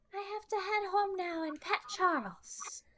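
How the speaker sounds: put-on very high-pitched little-girl child voice. Voicing the eight-year-old as she leaves the school: Beatrice voice. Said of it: "And she's just like".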